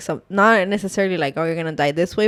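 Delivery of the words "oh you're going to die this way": normal talking voice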